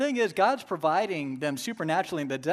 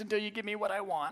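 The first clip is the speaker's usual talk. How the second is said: put-on nagging, wheedling, whiny complaining child voice; 3 semitones higher, 6 dB quieter than usual. Voicing a child who whines until given what it wants, whiny child voice. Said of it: "I will talk in this whiny voice".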